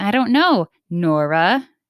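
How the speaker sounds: very slow, drawn-out, condescending, snippy delivery. Retelling how someone talks when being snippy: imitating a snippy tone. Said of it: "real snippy with you and they're like".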